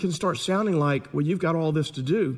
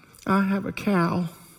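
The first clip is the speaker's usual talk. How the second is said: mock small child voice, higher and slower; 4 semitones higher than usual. Telling a family story, the speaker quotes their young daughter in the back seat; imitating a little child's voice. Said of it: "this little voice from the back goes".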